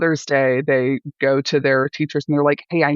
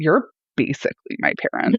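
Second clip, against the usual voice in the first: put-on sassy, cheeky six-year-old kid voice. Retelling what a six-year-old said about signing her reading: imitating a sassy six-year-old. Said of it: "a really sassy six-year-old can".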